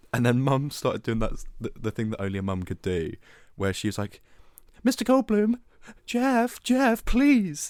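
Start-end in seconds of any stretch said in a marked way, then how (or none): 4.8-7.7 very strange, very high, drawn-out calling voice. Retelling how mum called out to a celebrity: imitating mum's very weird calling voice. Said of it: "very weird voice".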